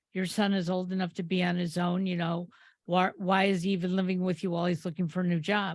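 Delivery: ordinary talk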